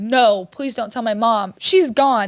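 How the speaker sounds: sobbing, tearful, begging tone. Retelling what was said to the police, imitating own past crying. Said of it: "I'm crying to the police".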